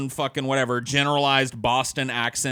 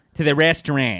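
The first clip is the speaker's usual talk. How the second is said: horrible put-on Boston accent; 4 dB louder than usual. Mocking the accent of people from Boston: mock Boston accent. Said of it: "your horrible, horrible accent, Boston".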